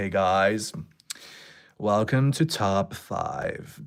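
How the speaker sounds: slow, drawn-out, put-on American accent. Asked if they can do one, a put-on American accent. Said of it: "Can you do an American accent?".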